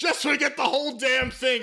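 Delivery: mock angry yelling voice.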